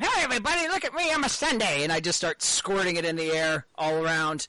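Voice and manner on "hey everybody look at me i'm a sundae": put-on wild, shrill, very high child's scream. Describing a character's distraction in a game: screaming in character. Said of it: "I scream".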